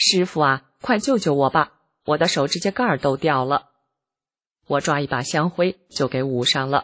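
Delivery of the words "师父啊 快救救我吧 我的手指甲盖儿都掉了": ordinary talk, nothing marked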